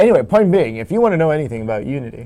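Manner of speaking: loud, showy, put-on live-show announcer voice. On a live show, the speaker talks up someone's Unity knowledge, in announcer voice. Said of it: "I'm doing that announcer voice again".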